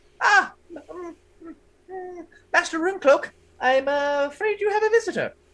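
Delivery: tiny, very high little gnome voice. Voicing a little gnome announcing a visitor to master runecloak: voicing a little gnome.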